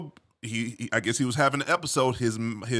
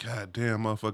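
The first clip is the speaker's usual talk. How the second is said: mimicked laughing, quieter; 2 semitones lower, 7 dB quieter than usual. Retelling the barber's reaction to the story: imitating the barber laughing. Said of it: "he laughing like".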